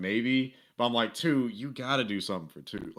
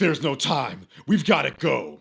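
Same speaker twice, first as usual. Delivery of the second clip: put-on aggressive superhero voice, louder; 6 dB louder than usual. Imitating a trailer line of Peter Parker: imitating aggressive Peter Parker. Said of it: "Yuri's performance as Peter is way more aggressive".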